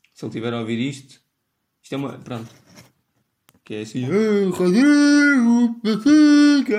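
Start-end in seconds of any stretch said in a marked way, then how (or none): 4.1-6.8 very high-pitched, very loud, shrill shout. Doing a friend's voice, a Benfica fan teasing about football: imitating a friend's voice. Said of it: "Agora estou a fazer a voz de um amigo meu".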